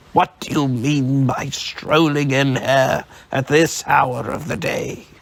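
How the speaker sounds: gruff, harsh growl, forced and put on. Narrator voicing a man scolding his late clerk, trying hard to sound harsh. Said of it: "trying hard to use his former harsh voice".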